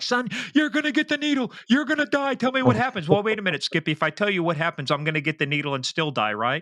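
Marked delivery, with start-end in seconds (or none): 0.0-3.1 screaming voice, pitched very high, yelling hard. Describing how TV interrogators get confessions, imitating one yelling and screaming. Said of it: "yell and scream at them like".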